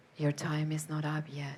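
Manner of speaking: put-on whisper. Retelling a voice heard while lying in a dark tunnel: imitating a whisper. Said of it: "and a voice whispers".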